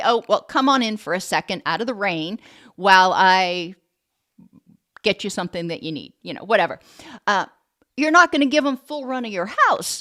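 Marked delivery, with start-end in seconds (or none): none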